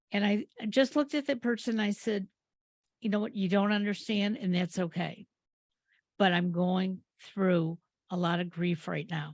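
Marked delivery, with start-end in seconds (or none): none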